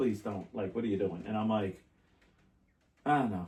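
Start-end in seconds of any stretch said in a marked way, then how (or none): 0.0-1.2 put-on tearful pleading, lower, quieter. Retelling how a woman begged him on the phone, imitating her crying, pleading. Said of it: "she's like crying on the phone".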